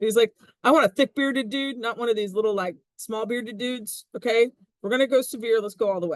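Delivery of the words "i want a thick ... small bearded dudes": loose put-on Southern accent with twang. Voicing a man who wants a thick-bearded dude: sort of southern accent. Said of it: "I don't know why I had to go sort of Southern accent on that".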